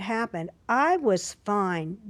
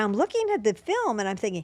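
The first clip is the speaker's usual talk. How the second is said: normal talking voice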